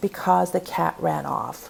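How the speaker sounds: ordinary delivery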